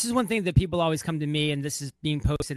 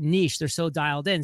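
ordinary delivery

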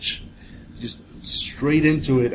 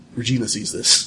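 ordinary talk

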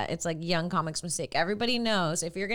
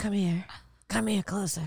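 put-on dying grandmother voice. Acting out Sarah on her deathbed pulling a grandchild close: imitating Sarah on her deathbed. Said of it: "pull her grandchild in and be like".

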